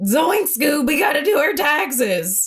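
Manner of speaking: cartoon sidekick buddy voice. Joking about a marriage with a spouse, speaking as Shaggy: Shaggy voice. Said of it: "your Shaggy, uh, impression".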